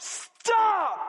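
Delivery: high, full-throated yell at the top of the lungs. Voicing Jesus warning prideful religious leaders: yelling at the top of lungs. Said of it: "Jesus yelling at the top of his lungs".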